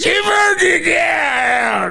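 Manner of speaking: very high, rough, creaky, slow, stretched-out shout. Retelling a 3 AM phone call, imitating Jerry Rock Rock. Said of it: "And Jerry goes".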